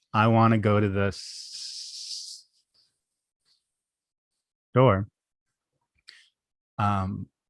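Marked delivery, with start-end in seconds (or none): 0.1-5.0 slow stutter catching on the s of store. Showing how to stay in the stutter: staying in the stutter on store. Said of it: "You could have stayed in that stutter".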